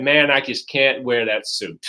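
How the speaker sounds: plain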